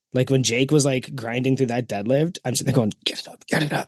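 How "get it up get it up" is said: quiet cheering, whispered under the breath. Retelling cheering on a deadlift in a video: imitating own whisper cheering. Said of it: "whisper cheering you guys on".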